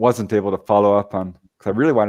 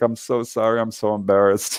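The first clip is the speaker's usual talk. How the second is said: acted, heavy, super apologetic man's voice. Speaker retells a man calling back; imitating a super apologetic man. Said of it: "super apologetic".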